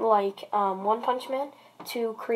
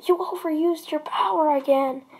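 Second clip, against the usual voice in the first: put-on yell, higher and louder; 6 semitones higher, 3 dB louder than usual. Retelling a fight scene, quoting a character calling out to Melissa: retelling a yell. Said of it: "As he yells to Melissa".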